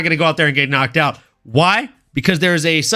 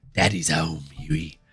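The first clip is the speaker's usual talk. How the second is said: very deep, grizzled voice, dropped very low; 13 semitones lower, 9 dB quieter than usual. Joining in the Billy Butcher bit: Billy Butcher voice. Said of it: "Billy Butcher".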